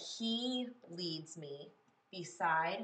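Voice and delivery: very slow, with he stressed. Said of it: "I want to stress that".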